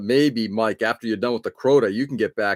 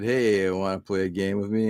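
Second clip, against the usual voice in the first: eerie, spooky, sinister creepy voice; 4 dB quieter than usual. Retelling hiding from someone on a ghost hunt, creepy voice. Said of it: "You use like a creepy voice".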